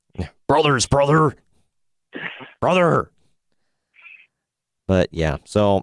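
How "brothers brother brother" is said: higher-pitched put-on wrestler-style screaming. Imitating Hulk Hogan screaming in someone's ear: Hulk Hogan screaming. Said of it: "Hulk Hogan screaming in his ear".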